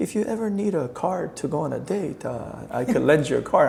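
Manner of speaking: put-on, heavy Chinese accent. Retelling a professor's offer to lend a car: Doctor Chan's heavy Chinese accent. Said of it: "he had a heavy Chinese accent".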